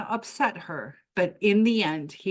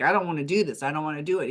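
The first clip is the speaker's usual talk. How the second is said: panicky, words tumbling over, rattled off; 3 semitones lower than usual. Retelling a man's protest on a roller coaster, imitating him freaking out. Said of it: "He starts freaking out".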